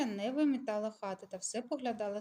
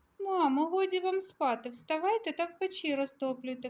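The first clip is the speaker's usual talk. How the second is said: high, loud teasing, mocking holler; 7 semitones higher, 5 dB louder than usual. Narrator reading a character shouting from the floor to the older woman, mocking shout. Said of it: "крикнула собі Мотря з полу".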